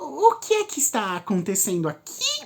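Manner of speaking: put-on high, falsely sweet childish voice, swooping pitch. Narrator reads a professor interrupting Harry, Fred and Luna: Umbridge's fake-sweet childish voice. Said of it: "uma voz falsamente meiga e infantil".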